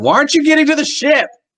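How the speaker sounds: very high, loud, teeth-gritted, clenched-jaw anger. Recounting how Viri suddenly turned on Yara, imitating Viri's clenched jaw. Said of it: "this like clenched jaw".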